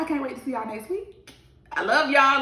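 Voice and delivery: choked up, holding back tears. Signing off and thanking listeners after a personal episode, holding back tears. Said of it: "I'm trying not to cry still".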